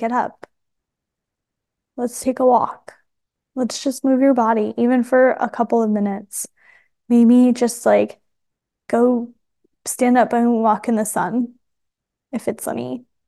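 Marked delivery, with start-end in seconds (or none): 0.0-6.5 soft, gentle, loving whisper. Showing listeners the voice to hear at the computer: soft loving whisper. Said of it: "little whisper, loving voice saying".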